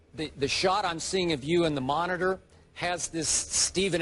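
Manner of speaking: ordinary talk, nothing marked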